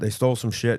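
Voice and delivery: ordinary talk, nothing marked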